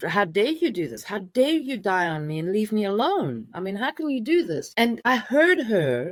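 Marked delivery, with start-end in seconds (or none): none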